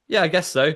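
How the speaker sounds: high, offhand, put-on casual nonchalant tone. Retelling a film scene, a shop worker's answer: imitating a nonchalant reply. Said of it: "she kind of nonchalantly goes".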